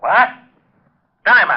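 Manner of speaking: high, sudden shouting. Reacting to news that a caller found a body: yelling. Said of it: "You better watch that yelling".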